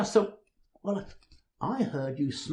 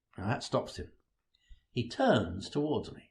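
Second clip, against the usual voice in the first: ordinary delivery, nothing marked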